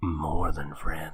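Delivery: slow, soft, conspiratorial whisper.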